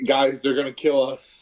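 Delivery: shouting. A player's character warns the group during a game, yelling a warning.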